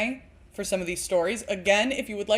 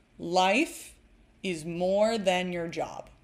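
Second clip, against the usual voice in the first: very slow, deliberate, every word spaced; 2 semitones lower than usual. Speaker repeats a point into the mic, said very slowly. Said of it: "very slowly into the mic".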